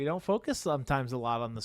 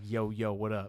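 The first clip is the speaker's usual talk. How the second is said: put-on confident, cocky, casual voice, lower; 6 semitones lower than usual. Imitating how Jordan walks up and greets you: imitating Jordan's confident attitude. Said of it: "that confident attitude and the snippiness".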